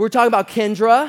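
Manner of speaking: loud, high-pitched blurted-out delivery. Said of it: "I seriously just said it just like that".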